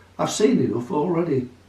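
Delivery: ordinary delivery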